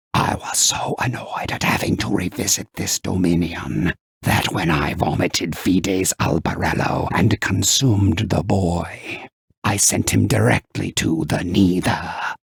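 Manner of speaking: demonic voice with a sibilant hiss on every word. Narrator reading a demon answering the mortals; hissing demon voice. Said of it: "The demon hissed, / The demon's beady eyes gazed down on [name]. / hissed the demon. / When I consume a mortal soul".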